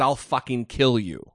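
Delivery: normal talking voice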